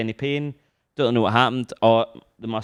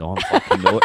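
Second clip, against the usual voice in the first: cheeky, sassy delivery, giving lip; 3 semitones lower, 3 dB louder than usual. Retelling a reply that sounded cheeky in their head: imitating someone being cheeky. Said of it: "it was like he was being cheeky".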